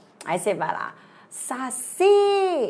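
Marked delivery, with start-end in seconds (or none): 1.3-2.7 saci called out, pitch lifted on si. Teaching word stress by calling saci at the gate, stress on si. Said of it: "olha só, subiu o si".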